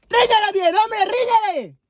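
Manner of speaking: shrieking, shrill, very high-pitched yell. In a scene, urging the other parent to scold the child, shouting. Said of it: "¡Que no chilles!".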